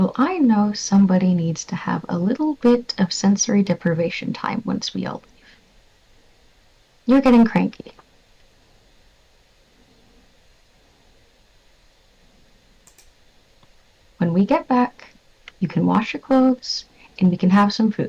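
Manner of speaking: quiet, soft voice. Voicing a character gently scolding a cranky companion: speaking quietly. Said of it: "is just quietly like".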